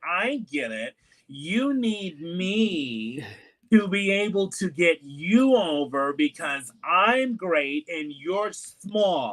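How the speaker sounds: very slow, swooping, sarcastic condescending drawl, "me" stretched. Retelling a promo with four or five women in the ring: imitating Nia Jax's sarcastic tone. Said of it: "She's sarcastic Nia Jax".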